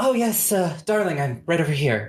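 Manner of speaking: high gnome woman voice. Storyteller voicing a gnome woman with a teacup calling to someone, Tiv, gnome woman voice. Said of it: "this gnome woman with sort of these uh".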